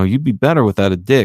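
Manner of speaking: whispered delivery. Retelling a movie scene where a character leans over: imitating a whisper. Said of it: "leans over to him and whispers to him".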